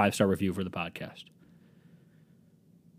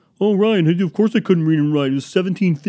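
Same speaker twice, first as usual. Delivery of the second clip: high, loud mocking heckling voice. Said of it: "before you fucking clown on me and say".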